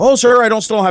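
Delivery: mock mildly exasperated. Retelling a call where a man wants software installed, imitating a slightly frustrated man. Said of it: "you tell he's kind of getting frustrated".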